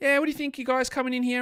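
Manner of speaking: put-on old-time show voice. Showing how the voice sounded on old shows: imitating own earlier voice. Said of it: "my voice is".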